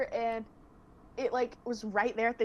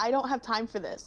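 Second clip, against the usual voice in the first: usual speaking voice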